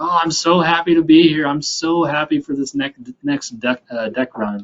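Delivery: put-on sarcastic voice. Retelling how a guy at a hard practice sounded: imitating a sarcastic voice. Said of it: "the sarcastic, uh, kind of voice".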